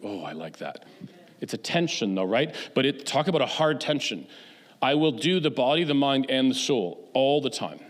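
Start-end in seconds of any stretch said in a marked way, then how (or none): 0.0-0.8 low, soft private murmur under the breath. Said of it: "And I'm like".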